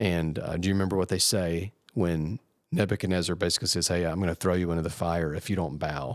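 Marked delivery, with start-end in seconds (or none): none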